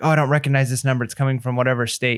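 ordinary talk, nothing marked

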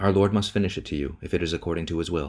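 plain reading voice

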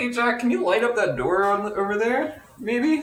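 in-character shouting. Calling out in character to jack to light a door: yelling at jack in character. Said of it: "I'm gonna yell at Jack".

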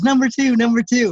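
high shout with everything the lungs have. Retelling yelling their pick at a man who kept asking, retelling a shout at full lungs. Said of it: "on top of my lungs".

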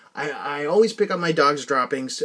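ordinary delivery

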